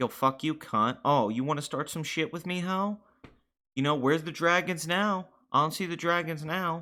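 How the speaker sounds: bitchy mocking tone. Acting out two characters glaring and taunting each other: catty catfight taunting. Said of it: "The bitches going at each other".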